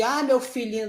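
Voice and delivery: ordinary talk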